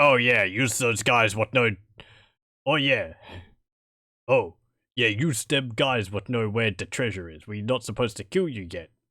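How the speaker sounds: fantasy orc character voice. Game master voicing one of the orcs to the players, in an orc voice. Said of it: "One of the orcs says".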